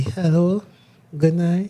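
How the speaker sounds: put-on seductive voice. Asked to do the seductive voice too, a speaker performs a put-on seductive voice. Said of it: "Do the seductive voice too".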